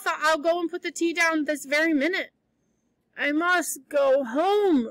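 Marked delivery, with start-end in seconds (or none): 3.2-4.9 very slow, dull, dazed yet stubborn and insistent. Diana repeats herself as Anne presses her to stay for tea: stupidly but determinedly. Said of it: "repeated Diana stupidly but determinedly".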